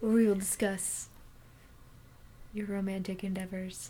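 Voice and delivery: smooth, soothing, soft, sultry late-night radio voice. Podcast co-host mock-introducing the show, in a sultry, soothing radio voice. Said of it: "Listen to our sultry, soothing voices".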